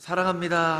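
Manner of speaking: loud, high, affectionate cheering shout.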